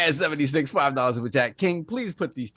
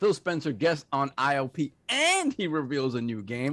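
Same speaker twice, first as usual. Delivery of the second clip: ordinary talk, nothing marked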